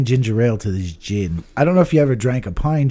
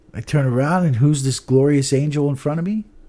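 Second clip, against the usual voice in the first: normal talking voice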